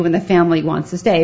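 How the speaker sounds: ordinary delivery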